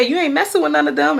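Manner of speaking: mock playful teasing. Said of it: "And I started laughing".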